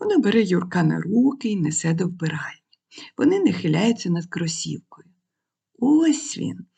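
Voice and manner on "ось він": gentle, tender, high-pitched voice. A mother shows her child the tongue on a sneaker: said gently. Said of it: "лагідно промовляє мама".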